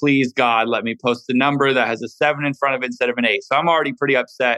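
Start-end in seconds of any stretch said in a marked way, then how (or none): none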